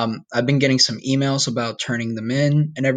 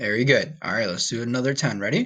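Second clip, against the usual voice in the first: plain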